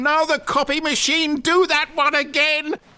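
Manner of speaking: very high-pitched, loud, excited, hyped cheering.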